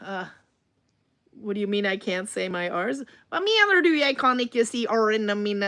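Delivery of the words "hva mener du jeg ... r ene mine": heavily pushed American accent on Norwegian. Speaking norwegian while overdoing an american dialect: exaggerated american accent. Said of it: "That's what I'm really pushing my American dialect now".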